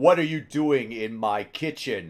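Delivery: loud, yelling orc character voice. Voicing an orc who finds someone in his kitchen, deep orc voice. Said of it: "you hear this deep orc voice coming from behind you".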